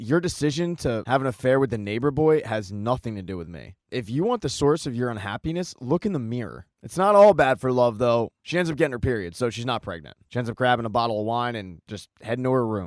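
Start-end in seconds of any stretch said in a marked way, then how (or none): none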